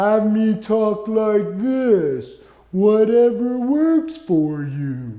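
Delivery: very slow, slow-motion drawl. Describing watching a video in slow-mo, talking in slow-motion speech. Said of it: "Watch it in slow-mo".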